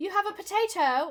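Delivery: loud put-on Australian accent, pitched way up. A speaker voicing an absentee landlord, slipping into an accidental Australian accent. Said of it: "That's Australian".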